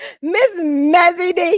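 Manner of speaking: high, loud, slow hype announcer call.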